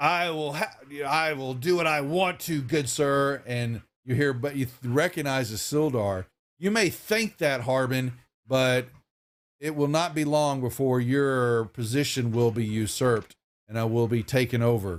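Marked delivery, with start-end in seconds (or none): 0.0-3.4 yelled, higher pitch, much slower. Narrating a scene, voicing someone yelling out from the street. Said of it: "you hear this yelling out from the street".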